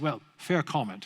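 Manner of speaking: put-on New Zealand accent. Quoting a scientist's reply to his argument, Kiwi accent. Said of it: "in his Kiwi accent".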